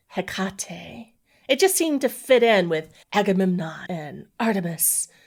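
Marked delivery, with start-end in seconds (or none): 0.1-1.1 Hecate with weight on middle syllable ca. Explaining how they pronounce the name, stress on ca in Hecate. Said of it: "putting the emphasis on that middle syllable".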